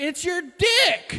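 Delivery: very high-pitched yelled outburst. Telling a crowd what you wanted to yell at an old lady: pretend screaming at someone. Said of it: "I wanted to just scream at her".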